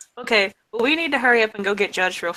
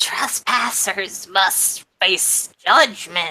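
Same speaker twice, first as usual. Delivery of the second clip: creepy, eerie voice. The voice inside a trapped character's head speaks up, in a creepy voice. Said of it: "Via the creepy voice inside my head".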